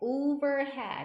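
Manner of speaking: "overhead" said very slowly, loud and stretched out. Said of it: "overhead 하면".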